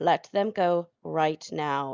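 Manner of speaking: slow, authoritative army-commander voice. Voicing a character stopping harm to captives: authoritative army commander voice. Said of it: "authoritative voice that she".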